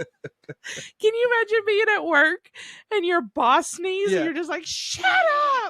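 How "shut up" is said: very high, sudden, reflexive yell. Imagining snapping at a sneezing boss at work, imitating a shout. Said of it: "stop myself from shouting at anyone".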